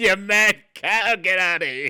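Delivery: put-on high, dismissive, old-school fifties doctor voice. Imagining a doctor dismissing a patient's symptoms: 1950s doctor impression. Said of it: "Like a nineteen fifties doctor".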